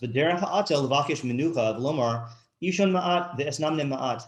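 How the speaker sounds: ordinary talk, nothing marked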